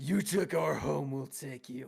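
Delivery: booming, very loud, rough troll bellow. Running a tabletop game, a troll yells out at the players; yelling troll voice. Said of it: "the troll yells out".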